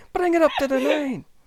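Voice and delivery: put-on high, loud, pleading Scottish accent. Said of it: "the accent is really fun".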